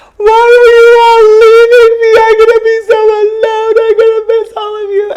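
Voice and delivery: mock very high, very loud tearful sobbing wail. Retelling what she said when she called back crying; imitating someone crying. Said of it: "crying on the phone".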